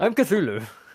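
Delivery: high flustered character voice. Answering a fan after the game: Cthulhu voice. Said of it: "that's exactly what he, what he sounds like".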